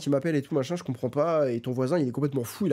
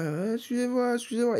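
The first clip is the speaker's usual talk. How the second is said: high, mock drunk-sounding, half-mad voice; 9 semitones higher than usual. Retelling a neighbor calling out from his door: imitating a neighbor who sounds drunk. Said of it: "il parle comme ça".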